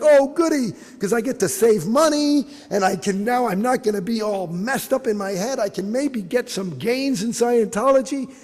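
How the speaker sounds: play-acted thrilled, gushing cheering-crowd voice. Retelling a crowd going crazy, imitating excited cheering. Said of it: "clapping and they're going crazy like".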